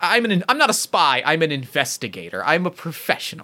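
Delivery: put-on prim, proper voice. Trying out an accent for the character Bam, a prim and proper voice. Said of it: "a little sort of prim and proper".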